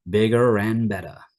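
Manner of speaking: terrible, fake put-on American accent. Teaching R linking in pronunciation; terrible American accent. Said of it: "sorry for my terrible American accent".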